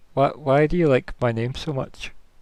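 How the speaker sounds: put-on worried, concerned little boy voice. Voicing a boy asked many questions about his name: worried boy's voice. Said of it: "looks a bit worried".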